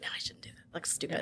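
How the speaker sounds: soft, unvoiced whisper.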